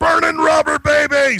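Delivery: high, loud yell. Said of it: "he just yelled".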